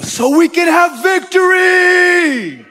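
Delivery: very loud, very high, very slow, drawn-out triumphant cry. Telling how men rose up behind the speaker, retelling the men's triumphant voice. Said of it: "the men rose up behind me with this triumphant voice".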